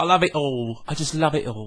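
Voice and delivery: put-on London Cockney accent. Joking that people who love it all say so in Cockney accent. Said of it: "they do it in a Cockney accent".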